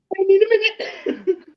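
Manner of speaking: very high voice, crying with laughter. Recovering after another speaker's joke broke them: laugh crying. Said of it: "he's legit laugh crying right now".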